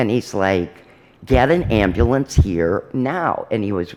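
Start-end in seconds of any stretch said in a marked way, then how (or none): 1.3-3.5 slow, play-acted furious and insistent tone. Retelling how the son demanded help from a policeman: imitating an angry demand. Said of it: "My son's really getting angry".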